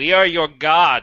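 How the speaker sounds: thundering divine voice. A voice from a burning light answers a player's question: booming godlike voice. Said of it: "A voice booms out from the booming light".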